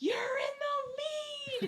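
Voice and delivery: loud yell pitched high. Retelling a friend screaming during a beer race: imitating Melissa yelling. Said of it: "yelling at me, screaming in my face".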